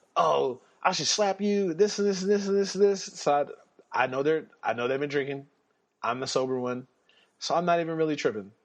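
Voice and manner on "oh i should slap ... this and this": put-on drunk voice, high, ranting yell. Retelling how a drunk friend yelled about the car keys: imitating someone yelling. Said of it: "he starts yelling at me".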